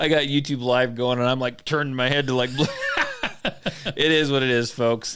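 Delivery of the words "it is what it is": slow, laughing voice. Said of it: "I'm laughing because".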